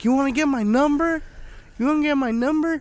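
very high-pitched, repeated hollering yell. Telling a friend about a woman yelling at them, retelling someone yelling. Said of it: "She was just yelling at us".

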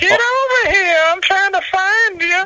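very high, creepy cartoon voice, pitched way up. Recalling how he talked on set the whole time, Herbert the Pervert voice. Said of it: "talking like herbert the pervert from family guy".

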